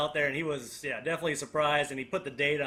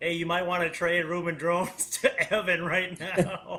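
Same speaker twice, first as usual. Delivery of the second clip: slow delivery, laughing through words. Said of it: "Mickey said".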